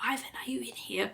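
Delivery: high, hushed whisper projected outward. Retelling Bobby looking for someone inside the shop, imitating Bobby whispering. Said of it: "Bobby is like whispering, like going".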